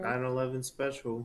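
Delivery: depressed. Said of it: "You said that so sad".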